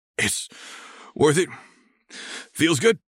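strained, high rasp. Asked whether he is crying, a man answers, rasping. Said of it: "Future Dave rasps, like it's taking effort to get the words out".

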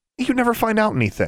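very high-pitched, scornful jab. Narrator reads one character's retort to another, scornful. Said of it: "Alexandra said scornfully".

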